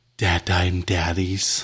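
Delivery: gentle whisper. Acting out saying a promo code to the ticket scanner: whispering gently. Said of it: "you have to whisper gently in their ear".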